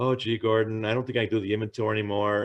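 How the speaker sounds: ordinary talk, nothing marked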